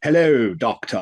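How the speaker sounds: put-on RP accent in an alien voice. Imagining sixties Doctor Who aliens, speaker greets the Doctor in an RP accent. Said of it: "it would have been an R P".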